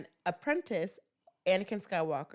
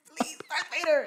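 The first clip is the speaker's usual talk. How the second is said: pleading tone, voice raised in pitch; 8 semitones higher than usual. Redoing a scene line, saying it better: acting as Third Sister. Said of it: "I could have acted better. Let me do it".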